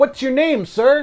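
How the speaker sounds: high, loud heckling call-out. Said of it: "and he goes".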